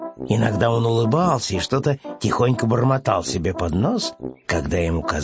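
ordinary delivery, nothing marked

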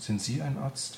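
simple, high, plain questioning tone. Narrator voices Anne addressing the woman a second time: quietly. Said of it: "fragte Anne nochmal leise".

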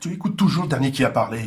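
agitated, worked-up, annoyed, irritated tone. In an argument about advice from a brother-in-law: worked up, irritated. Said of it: "Pourquoi es-tu si remonté ?".

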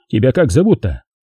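ordinary delivery, nothing marked

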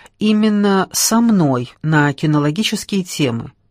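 plain

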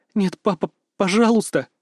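high, quavering, shaky, trembling voice. Narrator reads a daughter's plea to her father, in a trembling voice. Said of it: "дрожащим голосом произносит Марта".

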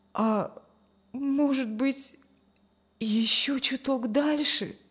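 soft, quiet, hopeful murmur. Without changing position, he asks as if to himself, quietly hopeful. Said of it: "В тихой надежде проронил Юрген".

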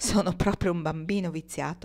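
usual speaking voice

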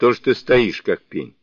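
plain

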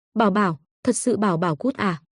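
ordinary delivery, nothing marked

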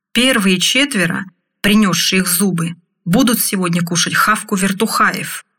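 ordinary delivery

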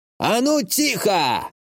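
sudden, high-pitched, full-throated yelled outburst. Grandpa clears his throat and yells at the narrator, yelling. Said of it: "Он прочистил горло и заорал".

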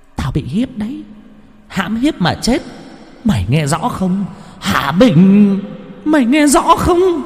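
thin, piercing, very high shrill voice. A narrator voices a man pinning another man to the ground, shrill voice. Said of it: "dùng giọng the thé như của mấy anh tám vía".

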